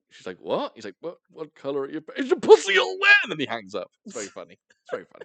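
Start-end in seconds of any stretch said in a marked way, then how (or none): 1.0-3.1 very high, nervous voice, swooping and rising. Retelling a scene where a nervous man phones a woman: imitating a nervous caller. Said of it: "he's so nervous".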